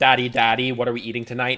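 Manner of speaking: put-on loud small-child voice, sounding hungry. Joking that the kids are hungry, imitating a hungry child. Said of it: "My kids are hungry".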